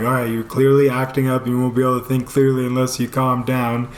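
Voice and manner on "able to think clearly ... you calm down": ordinary talk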